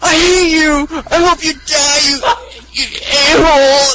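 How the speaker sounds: loud, very high, very slow sobbing wail. Retelling what a standby player yelled at his teammate, imitating loud crying and sobbing. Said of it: "It was like loud crying and sobbing".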